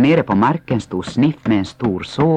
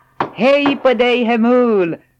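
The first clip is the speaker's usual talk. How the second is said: very high, drawn-out calling out; 13 semitones higher, 3 dB louder than usual. Moomintroll, passing by, greets Hemulen up on his roof; calling out. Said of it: "Ropade Mumintrollet".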